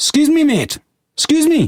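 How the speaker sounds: put-on very high voice, broad Scottish accent. Retelling a man stopping them on the steps, in a broad scottish accent. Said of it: "Your Scottish accent".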